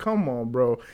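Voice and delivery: plain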